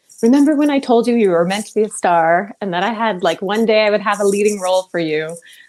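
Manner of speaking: plain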